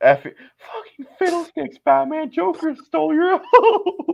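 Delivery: loud, high yell. Speaker retells the line they yelled out when told to say something bad: retelling a yell. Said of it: "I just like yelled this out".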